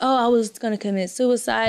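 ordinary talk, nothing marked

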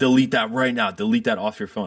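mock insistent, angry, scolding yell. Retelling how a man on the metro yelled about a selfie: imitating someone yelling. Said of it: "starts yelling at me".

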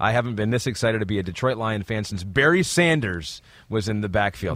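ordinary delivery

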